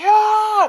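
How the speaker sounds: loud, high-pitched battle cry.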